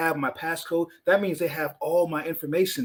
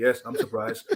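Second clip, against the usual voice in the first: mechanical, robot-like delivery; 5 semitones lower than usual. Imitating Mark Zuckerberg answering his family: robotic Mark Zuckerberg voice. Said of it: "he just talks like a robot".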